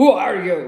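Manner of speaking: very loud, dangerous, menacing grunt. Reading a novel aloud, voicing a man holding a machete to the narrator's neck, grunting dangerously. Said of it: "The man grunted out dangerously".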